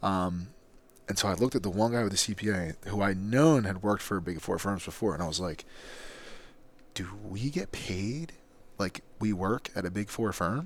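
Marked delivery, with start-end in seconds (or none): 7.0-10.7 hushed stage whisper under the breath. Recounting a question put to the team's CPA so no one else hears; retelling a half-whisper. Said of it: "I'm whispering it so no one else heard it".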